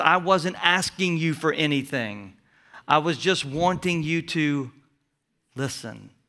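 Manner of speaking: plain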